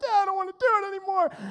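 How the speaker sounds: put-on high, crying child's voice, pleading through tears. Recalling failing at skiing as a child, imitating own crying to dad. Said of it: "I was just crying".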